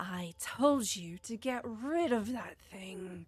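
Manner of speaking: words snarled out in a snarling voice. Narrating a fight, voicing her as she turns on the mushroom being, with a snarl. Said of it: "you hear her say with a snarl".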